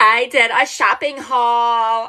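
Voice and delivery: slow, deliberately lame put-on voice, "haul" drawn out. Announcing a shopping haul, deliberately lame-sounding put-on voice. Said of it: "I'm purposely trying to sound like that".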